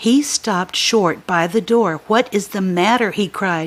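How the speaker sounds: ordinary delivery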